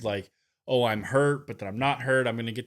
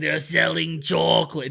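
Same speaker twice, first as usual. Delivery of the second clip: put-on raspy voice, higher and louder; 5 semitones higher, 5 dB louder than usual. Imitating a wrestler whose voice was so raspy: raspy Randy Orton voice. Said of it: "His voice was so raspy".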